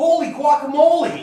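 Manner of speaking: very loud, high-pitched angry outburst. Reacting in a scene to a real alligator gift: angry-sounding exclamation. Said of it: "that sounded like the angry way".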